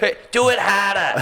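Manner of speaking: put-on heavy Boston accent. Imitating a woman in bed with an aggressive Boston accent. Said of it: "a woman with an aggressive Boston accent".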